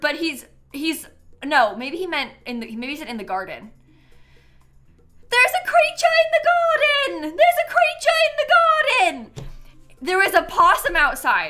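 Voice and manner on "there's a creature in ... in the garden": mock very high yelling, said twice. Retelling how Dan came running after seeing a possum, imitating someone yelling.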